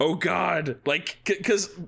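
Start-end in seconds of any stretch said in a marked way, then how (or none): 0.0-0.8 high, frantic, panicked outcry. Retelling a character running out of a room: imitating a frantic exclamation. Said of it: "all frantic".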